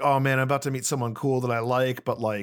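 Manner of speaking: normal talking voice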